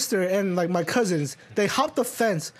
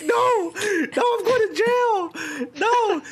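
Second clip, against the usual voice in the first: very high, slow, drawn-out, acted-out weepy sobbing; 12 semitones higher than usual. Retelling being a kid afraid of jail, imitating his own crying. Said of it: "I was, like, crying".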